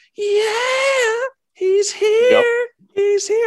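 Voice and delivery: put-on shrill, thrilled scream, very high, yeah drawn out. Retelling how a man burst through the door: retelling an excited scream. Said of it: "burst through the door and just screams".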